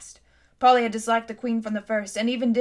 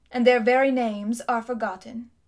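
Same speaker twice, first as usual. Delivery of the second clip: ordinary delivery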